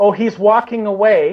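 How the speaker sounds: usual speaking voice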